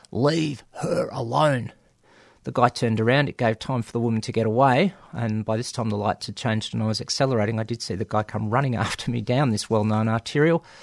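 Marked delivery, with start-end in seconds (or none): 0.1-1.7 put-on tough, butch voice. Driver retelling calling through the car window to a man: best butch voice. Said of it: "in my best butch voice went".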